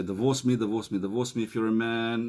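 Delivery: plain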